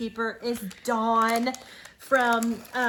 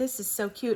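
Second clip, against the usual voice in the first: normal talking voice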